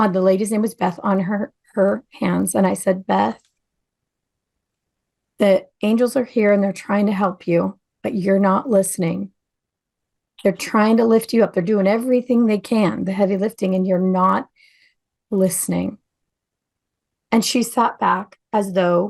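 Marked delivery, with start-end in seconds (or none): 3.1-16.0 completely calm, very calm delivery. Retelling what the speaker said to a woman, in the calmest voice. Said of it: "in the calmest voice".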